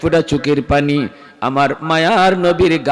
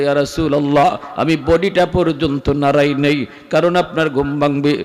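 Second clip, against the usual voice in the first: plain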